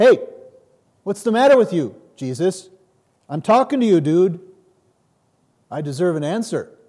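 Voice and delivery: demanding yelling.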